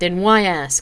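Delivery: sharp snapping. A woman, offered only gin instead of scotch, snaps back. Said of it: "she snapped".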